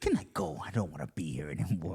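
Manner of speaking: put-on role-play style Scottish accent. Showing a friend how it's gonna be, in a Scottish accent. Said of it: "why are you giving me a Scottish accent right now?".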